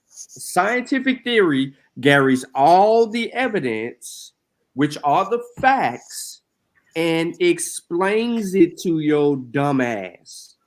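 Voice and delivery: slow, deliberate, each word laid down carefully. Explaining what a scientific theory is to a listener, said slowly. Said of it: "I'm gonna say this slowly again".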